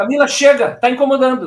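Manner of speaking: firm, forceful stern voice. Retelling telling a child on a plane to stop: retelling a vigorous scolding. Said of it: "tô dizendo assim, com vigor".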